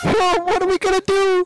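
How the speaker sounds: very high, pushed-up cartoon voice. Reacting to the last day in the game: sounding like Shaggy. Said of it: "You sound like Shaggy".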